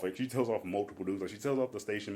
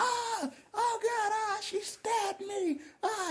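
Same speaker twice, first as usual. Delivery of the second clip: very high, long-held, drawn-out shrieking screams. Retelling a bar fight where someone was stabbed: imitating someone screaming. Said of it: "she starts screaming".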